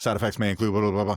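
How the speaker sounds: very fast rushed delivery. Speaker imitates the last seconds of a drug commercial, ripping through a disclaimer fast. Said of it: "when you're ripping really, really fast".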